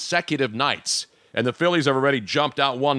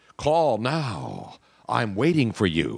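fake, sultry, sexy put-on voice; 3 semitones lower than usual. Asking a co-host whether their recorded message sounds like this: mock sexy voice. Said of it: "Did you do a sexy voice one?".

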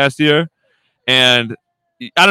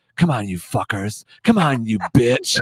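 hushed, urging half-whisper under the breath; 3 semitones lower, 5 dB quieter than usual. Retelling the dad half-whispering out the window while hunting: imitating a half-whisper. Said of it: "he'd be whispering".

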